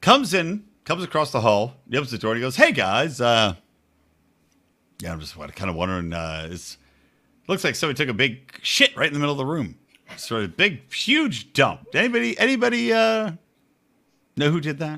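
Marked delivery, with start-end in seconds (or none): 2.6-15.0 mock, soft, totally unbothered, casual calm tone. Retelling what a guy from across the hall said when he opened the door: mock-calm, cool as could be. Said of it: "he really said as cool as could be".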